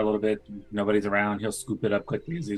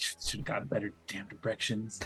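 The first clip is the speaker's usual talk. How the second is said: whispered, grumbled, hushed cursing under the breath; 10 dB quieter than usual. Playing a character walking to the rooftops, cussing under breath. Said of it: "cussing under my breath and be like".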